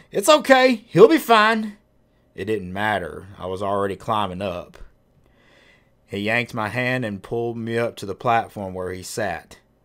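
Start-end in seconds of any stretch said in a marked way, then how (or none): 0.1-1.7 very loud, shrill, high reassuring shout. A man on the grader calls to the narrator's mother: yelling. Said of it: "Otis yelled".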